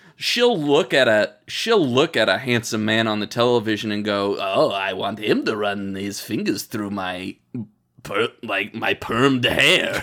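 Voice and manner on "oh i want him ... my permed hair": deep, lowered character voice. Acting out what the character Maxine would say: voice like Harvey Fierstein. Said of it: "Why are we making her sound like Harvey Fierstein?".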